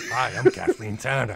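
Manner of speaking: put-on loud Brooklyn-accented voice. Doing a requested impression on the podcast: Kathleen Turner impression. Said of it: "do your Kathleen Turner, [name]".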